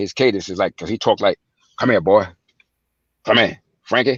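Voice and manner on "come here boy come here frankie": put-on harsh voice. Imitating how the man called his son over: Frank Lucas voice. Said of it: "You got his voice".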